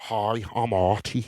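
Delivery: put-on soft, low-key Scouse Liverpool accent. Trying out a character's introduction in a Liverpool accent. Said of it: "I've never done it in Liverpool accent before".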